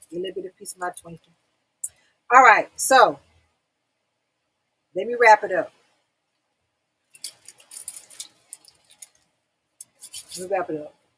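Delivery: speaking while eating, mouth full. Wrapping up a talk to viewers while eating while talking. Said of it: "I'm eating a little Twinkie".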